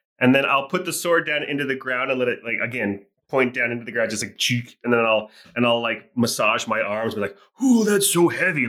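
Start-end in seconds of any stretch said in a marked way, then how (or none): 7.6-8.7 overplayed pantomime complaining, pitched up. Speaking as their character after planting a sword in the ground, overdone pantomimed complaining. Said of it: "Like overdoing it".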